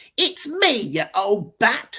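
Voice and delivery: mock very slow, loud, dragged-out snarl. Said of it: "I snarled".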